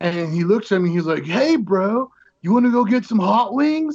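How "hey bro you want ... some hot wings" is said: high-pitched surfer dude voice. Retelling what an actor said after filming wrapped: imitating Ninja Turtle-like voice. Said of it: "You sound like a Ninja Turtle".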